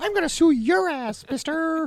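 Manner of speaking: voice rising way up, high and loud. Joking about what Mickey Mouse said about a politician: Mickey Mouse voice. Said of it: "talk in Mickey Mouse voice".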